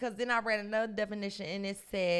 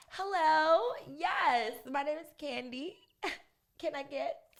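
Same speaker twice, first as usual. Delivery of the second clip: sugary polite voice, sweet, high and slow; 6 semitones higher than usual. Showing the voice used when ordering food: Chick-fil-A ordering voice. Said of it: "What's your Chick-fil-A voice?".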